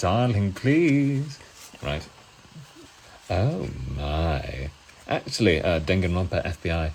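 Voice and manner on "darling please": flamboyant showman voice, high, loud and showy. Doing a short skit in a favourite character's voice: Mettaton voice. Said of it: "I did a little bit of a skit in his voice".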